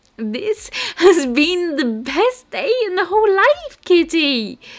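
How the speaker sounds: very high, loud squealing exclamation. Grabbing a partner in a hug and dancing them around, a character squealing. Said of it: "Ladybug squealed".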